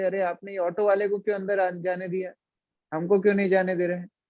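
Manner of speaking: plain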